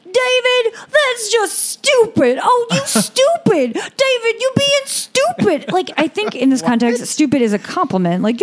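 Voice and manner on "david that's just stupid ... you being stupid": play-acted high, shrill, drawn-out top-of-the-lungs screaming. Describing a show, the speaker imitates a woman in the audience, imitating a woman screaming. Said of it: "she was screaming at the top of her lungs".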